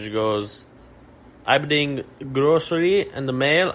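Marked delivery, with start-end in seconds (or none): 1.4-3.7 clumsy, bad put-on Russian accent. Speaker quotes what a woman said, in a bad Russian accent. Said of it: "I can't do a Russian accent".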